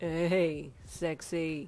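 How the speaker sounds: put-on very drunk, slurred-sounding voice. Answering a caller after three missed calls; very drunk voice. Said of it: "he greeted Darby in a very drunk voice".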